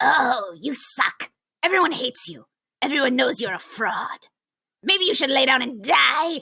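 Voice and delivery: sock-puppet hobgoblin voice. Speaker voices their inner critic, a hobgoblin sock puppet, in hobgoblin sock-puppet voice. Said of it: "That is literally what my sock puppet sounds like".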